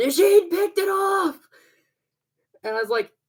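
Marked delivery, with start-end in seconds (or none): 0.0-1.4 mock high-pitched, very high, excited screaming yell. Retelling how someone screamed while the group watched the game: imitating someone screaming. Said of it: "somebody's screaming".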